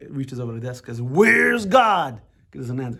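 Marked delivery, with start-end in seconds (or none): 1.0-2.2 big, thundering, very loud booming voice. Retelling how the rabbi confronts the younger brother across the desk, big booming voice. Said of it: "big booming voice".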